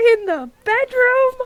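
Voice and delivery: very high-pitched, loud, blurted outburst. In a role-play scene, Ari interrupts the Admiral with a really loud outburst. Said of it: "Just boom".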